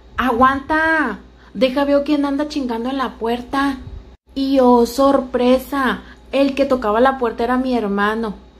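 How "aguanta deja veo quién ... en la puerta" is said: put-on, calling out. Recounting shouting to someone knocking at the door: retelling a yell. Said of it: "le grité".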